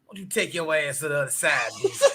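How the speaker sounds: smoker's voice. Quoting what the speaker's favorite aunt told the speaker, aunt's smoker's voice. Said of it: "with her smoker's voice".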